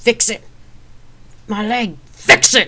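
drawn-out, very loud, high, slow furious shout. Narrator voicing the first-person character, in a foul mood, confronting a woman: shouting. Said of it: "I shouted".

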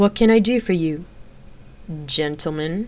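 slow, drawn-out drawl. A narrator reads Xena's line to a group of men, drawling. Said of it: "She drawled".

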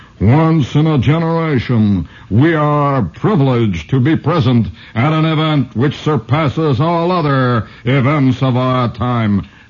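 epic trailer announcer voice. Speaker quotes the man who voices movie commercials, in movie commercial announcer voice. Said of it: "with that great, fantastic voice of the man who says".

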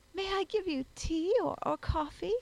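very sweet tone. Emily speaks to our hero as he swaggers in, in the sweetest tone. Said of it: "in the sweetest tone possible".

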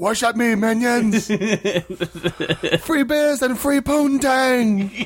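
put-on British accent. Speaker imitating how the other host will start talking, in a put-on British accent. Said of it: "you'll start talking in that British accent".

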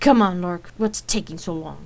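loud, drawn-out, impatient tone. Rain waiting on a slow Lark, impatient. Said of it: "Rain asked impatiently".

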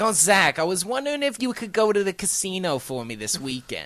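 put-on Queens accent in a middle-aged mother voice.

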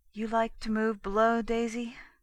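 soft, soft-spoken voice. Narrator reads him asking Daisy a question, softly. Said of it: "he asked softly".

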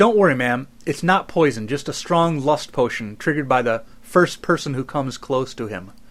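ordinary talk

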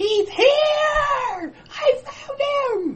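very high, stretched-out screaming elf voice. Telling a Christmas story as the door flies open, in a screaming elf voice. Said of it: "And an elf voice screams".

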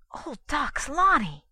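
sudden, high gasp. Douglas suddenly recognizes the hooded woman; gasping. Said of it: "he gasped".

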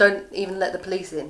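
ordinary talk

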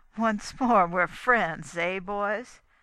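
strained, loud, forced laugh with fake joviality. Rance addresses the men after an awkward moment, with a forced laugh. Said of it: "said Rance with a forced laugh".

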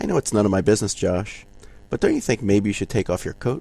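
quietest, softest, most understanding tone. Retelling own words to an upset son: quietest, most understanding voice. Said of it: "in my quietest, most understanding voice said".

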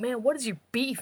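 freaked-out, agitated outburst. Retelling a game where Bowser is chased and taunted: imitating Bowser freaking out. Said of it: "Bowser just starts freaking out".

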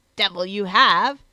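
disgusted, through gritted teeth. His lordship, offered a hound by another man: exclaiming through grinding teeth. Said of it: "exclaimed his lordship, grinding his teeth with disgust".

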